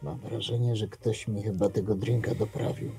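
barely-there, very quiet whisper, close to the ear. Leaning in close to the other person, very quiet whisper into the ear. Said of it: "bardzo cichym szeptem prawie że do ucha".

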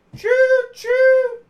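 very loud, very high, shrill, booming train-whistle choo choo. Calling out the Hype Train with its sound effect: loud choo choo.

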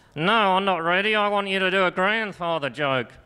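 high, thrown ventriloquist dummy voice. A ventriloquist answers his own question as the puppet, in Mr. Dog puppet voice. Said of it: "I haven't been doing the ventriloquism".

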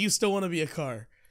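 ordinary talk, nothing marked

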